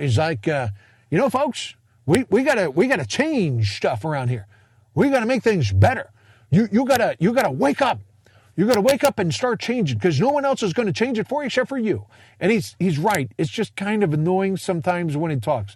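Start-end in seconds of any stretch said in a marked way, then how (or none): 1.3-12.1 Kentucky twang, higher pitch. Imitating a speaker from a program he finds annoying: imitating a Kentucky twang. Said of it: "he's got this Kentucky accent".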